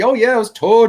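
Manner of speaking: loud, high, shrill, booming thick Irish brogue. Retelling a local construction worker's words, imitating a thick irish accent. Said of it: "had this really thick Irish accent".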